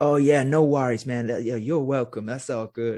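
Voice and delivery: put-on strong American accent. Retelling meeting an admired author who answered: imitating Bruce Lipton's full American accent. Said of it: "in full American accent".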